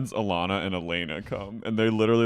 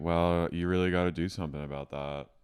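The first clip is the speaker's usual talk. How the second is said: put-on flat voice; 3 semitones lower, 5 dB quieter than usual. Recalling how she would advise Ron, imitating Jenny's deadpan advice. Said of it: "I do love Jenny's deadpan advice".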